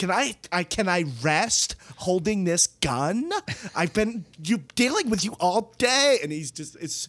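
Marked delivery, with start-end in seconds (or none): 0.0-6.2 put-on shrieking, high-pitched screaming rant. Retelling a film scene where she holds a gun: imitating someone screaming. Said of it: "screaming at him".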